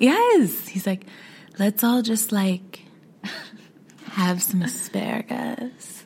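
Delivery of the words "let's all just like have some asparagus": seductive, sensual, suggestive voice. Discussing a show with friends, the speaker mimics a man who talks slow: imitating his slow, sensual talk. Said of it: "He talks slow".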